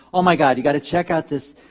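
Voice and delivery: plain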